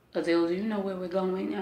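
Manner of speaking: normal talking voice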